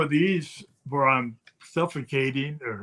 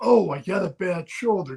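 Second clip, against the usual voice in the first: mock mild called-out protest, pitched up; 5 semitones higher than usual. Retelling an opponent's excuse in the ring: imitating someone yelling. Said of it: "Rick yells out".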